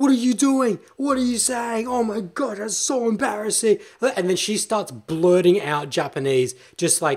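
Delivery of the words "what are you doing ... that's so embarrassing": raised, high-pitched, blurted yelling outburst. Retelling how the woman next to the speaker yelled out: retelling a yell. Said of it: "Yells out".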